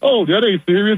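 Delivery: mock chuckling, amused, high laughing dismissiveness. Retelling how someone reacted while explaining the clip, imitating someone laughing while talking. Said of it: "he was just laughing like".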